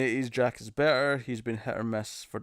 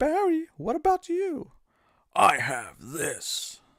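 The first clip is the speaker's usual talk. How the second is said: stilted game voice acting, higher pitched; 11 semitones higher than usual. Doing lines from an old video game: Resident Evil bad voice acting. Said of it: "Resident Evil One, bad voice acting".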